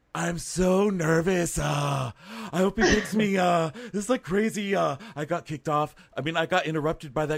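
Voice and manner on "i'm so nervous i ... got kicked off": high, drawn-out bimbo voice. Imitating the bimbos from the beach: imitating a beach bimbo. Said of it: "I loved the bimbos from the beach bimbo. She's like".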